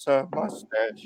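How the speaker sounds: soft, hushed voice. Retelling a bandleader's outburst over a mustache, the wearer replies in a quiet voice. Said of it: "you hear this quiet voice go".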